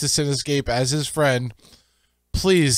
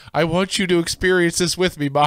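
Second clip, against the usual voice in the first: ordinary delivery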